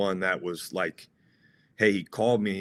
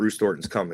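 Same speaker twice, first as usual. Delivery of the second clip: ordinary talk, nothing marked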